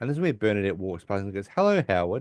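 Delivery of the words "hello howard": put-on dismissive tone, higher pitch. Retelling a TV scene where Bernadette greets Howard: imitating Bernadette, dismissive. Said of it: "really just be very dismissive".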